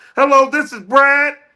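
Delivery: very high, very slow, drawn-out disguised voice. Joking about phoning in to a contest with a fake voice. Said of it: "I'm about to call with a fake voice".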